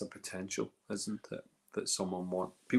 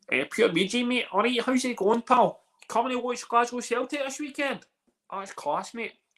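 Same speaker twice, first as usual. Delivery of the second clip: exaggerated, much higher, louder Glasgow Scottish accent. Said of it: "what kind of Scottish you want me to be".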